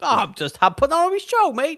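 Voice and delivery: bad put-on Cockney accent, pitched very high. Retelling a superhero scene, the speaker voices Magneto's reply in a bad Cockney accent. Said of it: "How how how is our Cockney accents?".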